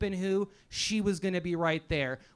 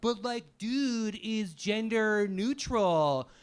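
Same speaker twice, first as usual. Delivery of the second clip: casual, drawn-out California dude voice. Mocking people from California in a comedy set: imitating people from California. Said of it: "people from California are like".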